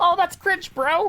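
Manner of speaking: put-on very high-pitched tiny child's voice. Doing a joke voice of some little high-pitched kid, high-pitched little kid voice. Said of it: "some little high pitched kid".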